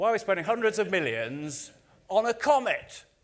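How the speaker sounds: put-on sceptical interviewer voice. Retelling a TV interview, imitating a sceptical interviewer: bad Jeremy Paxman impression. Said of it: "that's not a very good impression".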